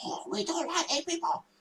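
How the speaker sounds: high, very soft, hushed whisper. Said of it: "he was whispering".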